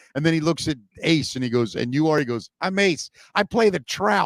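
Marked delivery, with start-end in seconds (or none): 2.6-4.3 put-on small, mousy, high Long Island accent. Retell how Ace answered the man reading a cue card, in an Ace impression, mousy Long Island accent. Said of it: "with that Long Island accent".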